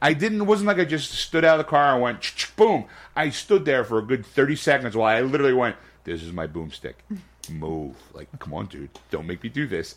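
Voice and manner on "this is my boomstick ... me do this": put-on, acted-out begging, pleading tone. Retelling giving another player a warning: retelling pleading with the TV. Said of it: "I'm pleading with the T V going".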